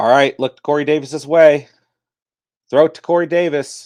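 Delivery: loud, high-pitched, urging cheering plea.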